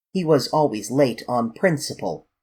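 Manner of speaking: ordinary delivery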